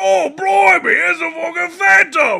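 put-on cockney accent, very loud and very high. Imitating a very British film cabbie: imitating a cockney accent. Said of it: "just so cockney".

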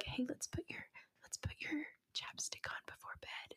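soothing, soft, breathy ASMR whisper. Imitating an ASMR creator telling viewers bedtime steps: imitating Viv's ASMR voice. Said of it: "She's always like".

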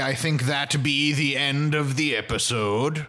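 talking like a pirate. Ending a podcast episode after joking about doing pirate voices: pirate voice. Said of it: "hearing us do pirate voices".

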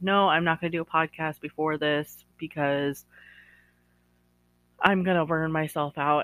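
ordinary talk, nothing marked

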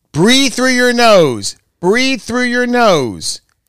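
high scream. Recounting an incident to the other speaker, imitating Missy screaming. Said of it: "she was screaming".

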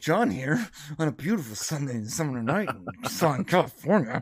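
mock angry online-video voice. Imitating a YouTuber's video intro; imitating John's angry intro. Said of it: "he like looks angry right away".

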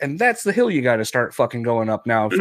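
ordinary talk, nothing marked

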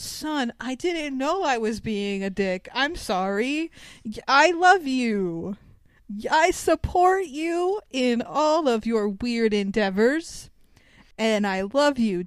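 stiff, stilted, slow, wooden line reading. Retelling the movie dad's apology to his son: imitating wooden, stilted dialogue. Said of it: "wooden, stilted dialogue".

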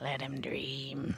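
creepy, hushed, soft murmur. Retelling how Robert said the line at the end: imitating Robert, creepy. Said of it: "And it was creepy".

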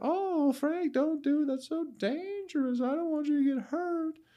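very high-pitched put-on woman's voice. Speaker acting out the woman recording a man near a gator; high-pitched woman's voice. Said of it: "a lady with a high-pitched voice".

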